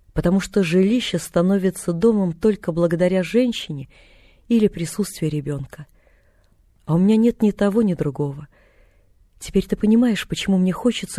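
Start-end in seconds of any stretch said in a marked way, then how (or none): none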